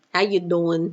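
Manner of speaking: New Jersey accent. Speaker greets someone mid-conversation: new jersey accent. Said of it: "There's my Jersey accent coming out".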